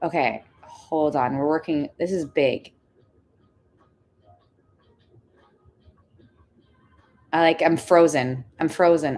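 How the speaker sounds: voice on the verge of tears. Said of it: "I think I'm gonna cry".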